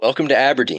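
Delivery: silky, suave leading-man voice. Voicing a talking dog that greets the players: George Clooney voice. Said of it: "a voice that sounds very much like George Clooney".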